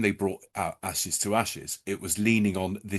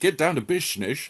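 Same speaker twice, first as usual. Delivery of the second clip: put-on accent going Dutch; 7 semitones higher, 3 dB louder than usual. Imagining a character in a teddy bear hat walking in: Sean Connery voice. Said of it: "I went a bit Dutch with it".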